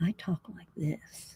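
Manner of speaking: very quiet, breathy, barely-there whisper. Retelling how the first stream was done: imitating own very quiet voice. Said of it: "very quiet".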